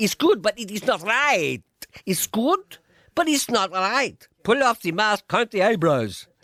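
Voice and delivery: put-on high Spanish accent. Joking that the impostor's impression comes out: Roy Walker in a Spanish accent. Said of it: "It will come out in a Spanish accent".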